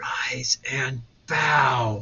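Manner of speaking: menacing, low, hushed, frightening voice, "bow" stretched. A guild madam commands students who didn't move, low frightening tone. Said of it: "she lowered her voice to a frightening tone".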